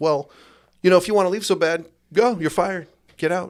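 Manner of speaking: high, snarky, sneering delivery. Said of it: "my snarky ass boss goes".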